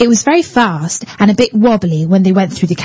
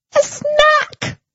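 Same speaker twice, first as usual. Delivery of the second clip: shrill little squeal, very high; 4 dB quieter than usual. Rosie tells the buffet lady what she and Harry want, squealing. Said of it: "squealed Rosie".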